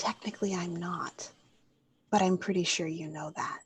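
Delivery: close, quiet, confidential leaning-in whisper. Playing a character who leans in close to another: whispering in character. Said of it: "she leans in really close and whispers".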